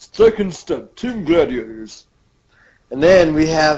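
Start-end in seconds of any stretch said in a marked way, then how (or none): 0.0-2.0 TV narrator voice-over, announcing style. Retelling an episode, switching to the narrator's voice for the announcement. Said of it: "Or I should do it in the narrator's voice".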